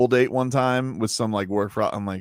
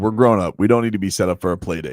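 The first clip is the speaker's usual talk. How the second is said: plain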